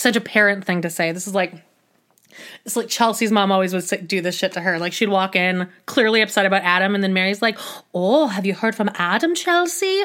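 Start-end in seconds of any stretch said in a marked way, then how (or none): 7.9-10.0 put-on Canadian accent with a motherly tone. Describing Chelsea's mom asking about Adam, quoting Mary in a Canadian voice. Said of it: "I'm like doing like my Canadian voice now".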